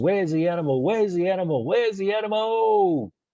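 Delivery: full-throated, excited top-of-the-lungs yell, pitched high. Retelling how an excited man on the pool deck shouted, imitating yelling at top of lungs. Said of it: "yelling out of the top of his lungs".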